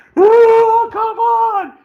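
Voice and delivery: very loud, very high, shrill shout. Retelling a mother with a hyperactive kid, imitating someone yelling. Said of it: "she's yelling at him".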